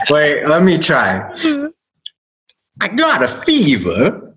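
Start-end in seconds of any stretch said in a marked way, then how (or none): 2.8-4.1 high southern drawl with swooping, swinging pitch. Taking his turn at an impression game, failed Christopher Walken impression, southern drawl. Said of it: "You sound like a southern drawl".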